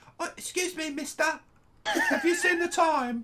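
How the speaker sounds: very high, sing-song street urchin accent. Teasing the other speaker's voice as a Dickens-novel urchin: street urchin accent. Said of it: "you do it like some street urchin in a in a Charles Dickens novel".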